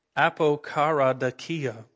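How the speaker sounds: apokaradakia said slowly, carefully, syllable by syllable.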